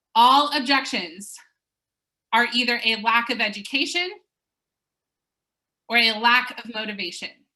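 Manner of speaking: slow, deliberate, word-by-word delivery. Webinar speaker telling everyone to write this down, said slowly. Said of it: "I'm going to say it slow for you".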